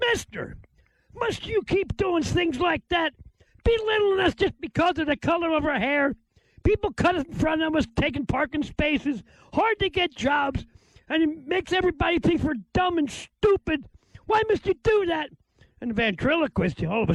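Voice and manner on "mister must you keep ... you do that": play-acted, high-pitched screaming woman's voice. Telling a joke where a blonde woman yells at a ventriloquist: imitating a woman screaming. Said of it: "started screaming at him".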